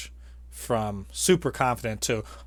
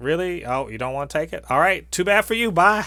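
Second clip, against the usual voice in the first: put-on down-home drawl, high and raised; 6 semitones higher, 6 dB louder than usual. Retelling a scene, the speaker quotes a woman in a down-home hometown accent. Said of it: "with that hometown, down home accent".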